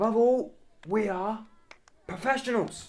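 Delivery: rusty-sounding voice. Speaking as he pushes the grand mahogany doors open: rusty voice. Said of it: "He says in his rusty voice".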